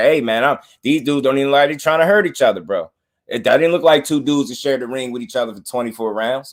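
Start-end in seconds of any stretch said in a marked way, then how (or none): none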